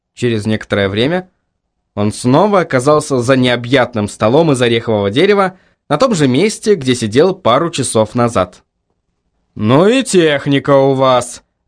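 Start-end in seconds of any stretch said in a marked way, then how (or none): 9.5-11.4 slow, caustic, biting sarcastic jab. A client, back at the company's desk, remarks to the staff, sarcastic. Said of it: "язвительно сказал Куайл".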